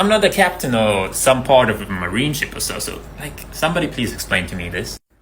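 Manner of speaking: ordinary delivery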